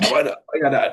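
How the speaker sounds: imitated Jamaican accent. Retelling a father's reaction to a job choice: Jamaican accent imitation. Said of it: "he said it in his Jamaican".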